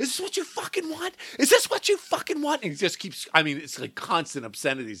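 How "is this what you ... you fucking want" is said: put-on very high, furious, enraged screaming. Speaker retells a man bashing a car in a neighborhood, retelling his yelling. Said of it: "he's yelling".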